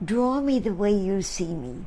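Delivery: ordinary talk, nothing marked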